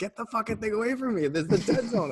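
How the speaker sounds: very high, shrill yell. A warrior player retells another player's reaction to a mob pulled right up to him, imitating someone yelling. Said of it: "he's like yelling at me".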